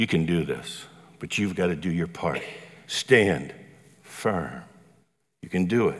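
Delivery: nurturing, encouraging fatherly voice. A speaker illustrating a verse's encouragement to listeners, voicing a nurturing father. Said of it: "like a father comes alongside and says".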